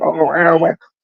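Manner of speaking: high, squeaky little nerd voice. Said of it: "squeaky little nerd".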